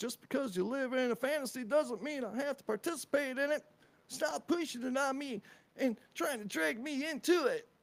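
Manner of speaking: odd put-on voice. Reading aloud what someone wrote, in a weird voice. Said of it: "I just read it in a weird voice".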